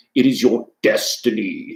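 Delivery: slow, unhurried delivery with every word drawn out. Quoting a famous line in a put-on voice: James Earl Jones voice. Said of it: "In my best, uh, James Earl Jones voice".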